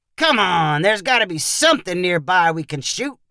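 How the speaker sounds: usual speaking voice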